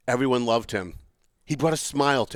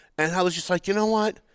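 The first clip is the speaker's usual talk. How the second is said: ordinary talk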